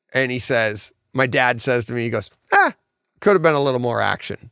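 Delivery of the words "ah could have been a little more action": mock sarcastic, tongue-in-cheek, quick and swooping. Retelling what his dad said walking out of the movie; imitating dad's sarcastic remark. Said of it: "He's sarcastic".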